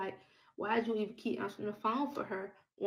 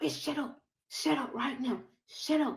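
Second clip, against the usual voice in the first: furious, heated, angry, pitched-up berating; 5 semitones higher than usual. Retelling what he kept saying during the argument, imitating an angry man. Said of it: "because he's so angry".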